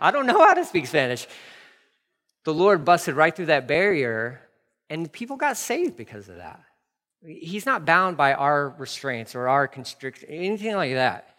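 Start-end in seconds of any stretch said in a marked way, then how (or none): 0.0-1.3 put-on panicked, freaked-out, frantic voice, pitched higher. Retelling a friend's shocked reply about speaking Spanish: imitating a friend freaking out. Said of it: "he's freaking out".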